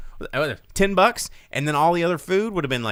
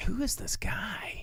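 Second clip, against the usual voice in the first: soft, hushed whisper. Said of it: "'cause I was like".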